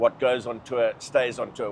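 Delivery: ordinary talk, nothing marked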